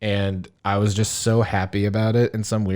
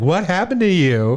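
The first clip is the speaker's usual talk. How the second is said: mock casual, nonchalant tone, higher pitch; 8 semitones higher, 3 dB louder than usual. Retelling a meme where a guy asks a question: imitating a nonchalant question. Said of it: "so nonchalantly asking".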